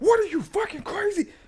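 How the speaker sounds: mock furious, disbelieving outburst, pitched very high. Retelling a movie scene, acting out an angry Murtaugh: imitating furious Murtaugh. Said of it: "he is furious".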